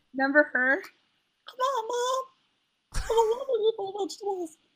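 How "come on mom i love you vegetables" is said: very high, cartoonish squeak, going way up. Speaker, hoarse from a wedding, tries a quote in a Bobby voice. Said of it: "I can't do Bobby's voice as good".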